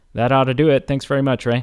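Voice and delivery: acted sarcastic, dismissive delivery. Retelling a movie character's dry reply: imitating Peter Venkman's sarcasm. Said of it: "Peter Venkman just sarcastically says".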